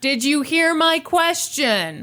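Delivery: high, mild half-shout. Retelling a man repeating his question to someone who stared back: imitating someone shouting. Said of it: "So he shouts again".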